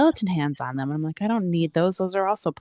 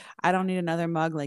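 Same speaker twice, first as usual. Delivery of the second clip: ordinary talk, nothing marked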